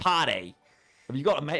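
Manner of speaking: attempted Australian accent. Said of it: "Does that sound Australian?".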